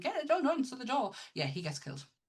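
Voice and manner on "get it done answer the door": screamed loudly, pitched high. Retelling a film scene where she screams on the phone: imitating a scream. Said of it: "she's, like, screaming".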